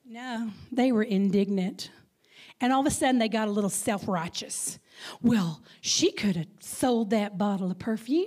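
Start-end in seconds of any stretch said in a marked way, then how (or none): 5.3-8.3 put-on Texas accent. Retelling a Bible scene, the speaker voices the disciples at the table: Texas accent. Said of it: "I'm using my Texas accent now".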